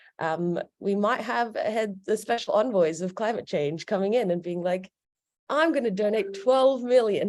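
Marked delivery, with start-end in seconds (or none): 5.5-7.3 mock grand, big, booming, excited voice. Describing visiting climate envoys, the speaker imitates one in a big voice. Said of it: "he's saying it in such a big voice".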